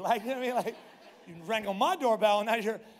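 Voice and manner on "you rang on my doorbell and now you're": raised, irritated, fussy tone. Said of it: "I was getting a little fussy".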